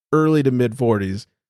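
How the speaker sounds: plain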